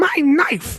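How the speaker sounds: very high, pissed-off, angry yelling shout. Retelling how an angry traveler answered a security agent: imitating an angry yell. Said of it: "you don't need to yell".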